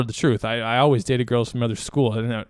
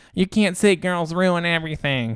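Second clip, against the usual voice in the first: high, scolding put-on feminist voice; 5 semitones higher than usual. Imitating how the wrong person would react to this, in a mock feminist voice. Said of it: "really good uh, feminist voice right there".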